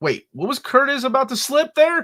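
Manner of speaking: high, loud, excited teasing call.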